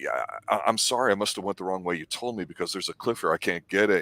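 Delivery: ordinary delivery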